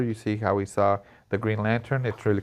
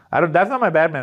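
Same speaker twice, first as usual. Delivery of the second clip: usual speaking voice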